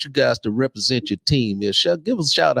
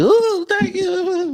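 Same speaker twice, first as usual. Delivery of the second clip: mock, very high, giddy, gushing tone. Retelling the reaction his wife is used to: imitating a giddy thank-you. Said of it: "she's used to the giddy".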